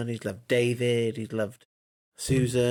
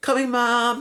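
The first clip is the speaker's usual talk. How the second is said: very high, raised voice, called out loudly; 12 semitones higher, 6 dB louder than usual. Imitating an actress's line delivery: Emma Watson impression. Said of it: "She goes".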